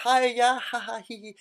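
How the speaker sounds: posh-sounding speech. Demonstrate to listeners how you sound around other men you're avoiding, in a posh voice. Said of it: "talk much lower like this".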